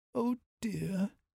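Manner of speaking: soft, high-pitched muttering under the breath. Reading a children's story, Dusty can't find any more daffodils: muttering. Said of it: "she muttered".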